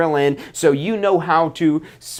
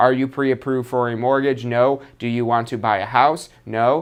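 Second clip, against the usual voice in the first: flat, lower robotic monotone; 5 semitones lower than usual. Showing listeners how flat delivery sounds, flat robotic monotone. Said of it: "saying it flat like a robot".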